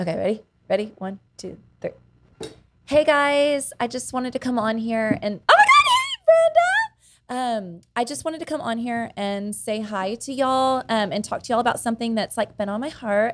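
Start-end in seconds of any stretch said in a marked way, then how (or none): 2.8-13.4 high, sing-song delivery. Asked for an impression, speaker performs it; Facebook Live impression. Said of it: "my Facebook Live impression".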